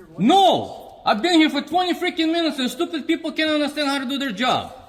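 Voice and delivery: shrill, very high, furious angry scream. Refusing a request to lower the voice: yelling. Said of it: "Let's lower your voice".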